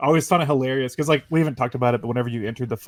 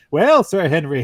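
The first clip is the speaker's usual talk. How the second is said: put-on loud, raised, taunting, jeering Irish accent; 3 semitones higher, 7 dB louder than usual. Speaker retells Travis cutting Henry off, mocking Henry's Irish accent. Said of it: "mimicking his like Irish accent".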